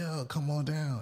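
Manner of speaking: mock big-voiced, high-pitched, drawn-out call. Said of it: "I hear this big voice yell".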